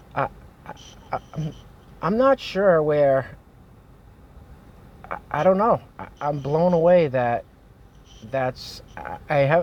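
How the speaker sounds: stammering, stuttering, sounding at a loss. Reacting to what was seen on social media, at a loss for words: stuttering. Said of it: "I'm stuttering here".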